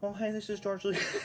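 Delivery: put-on small, little voice. Retelling how an old actor did the voice on the phone: little George Lucas voice. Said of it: "he did the little voice of George".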